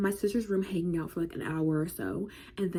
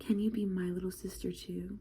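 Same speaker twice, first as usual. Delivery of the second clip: quieter whispered voice; 6 dB quieter than usual. Recounting cuddling with her, the speaker repeats what she said, retelling a whisper. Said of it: "she whispers in my ear and she says".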